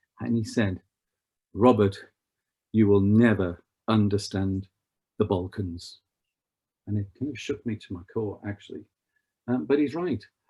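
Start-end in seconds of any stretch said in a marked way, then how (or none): 1.5-6.0 grave, severe, dead-serious, stern delivery. Retelling a diplomat friend's warning, looking him in the eye: imitating a stern serious friend. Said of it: "very sternly and very seriously".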